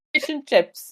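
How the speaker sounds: put-on British accent. Joking about only meeting British speakers on a trip, in a mock British accent. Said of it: "formally apologize to the great".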